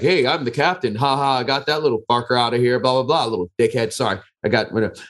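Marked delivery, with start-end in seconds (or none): 0.0-3.9 smug, gloating, jeering, crowing brag. Imagining what the football captain said after the expulsion: imitating a gloating football captain. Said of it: "football dude is like".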